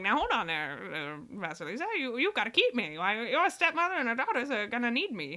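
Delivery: muffled, horrible-sounding talking skull voice. Speaker retells a story, voicing a talking skull in a muffled talking-skull voice. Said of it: "That's a horrible sound".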